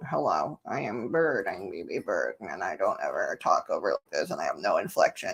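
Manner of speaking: very low, soft, deep bottom-of-range voice. Imitating how a talking bird sounds: imitating a bird's low flat tone. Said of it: "lowers it into that really low, like, flat tone".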